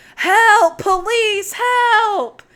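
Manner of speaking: loud, high-pitched shouting. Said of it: "He's yelling".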